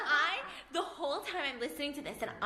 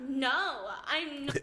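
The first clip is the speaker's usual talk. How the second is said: mock-crying, acted tearful delivery. Retelling denying to her mom that she was crying, acting out a tearful denial. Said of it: "So I start crying more".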